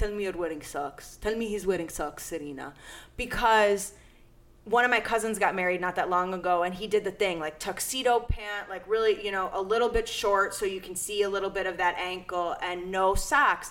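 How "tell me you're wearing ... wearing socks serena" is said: put-on Middle Eastern accent. Quoting her dad about her fiancé's wedding tuxedo, in a thick Middle Eastern accent. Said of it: "He has like a thick Middle Eastern accent".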